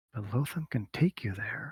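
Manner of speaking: secretive, tempting hushed half-whisper. Voicing a character who offers to take someone there: half-whispering in character. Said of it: "Kinda in a whisper".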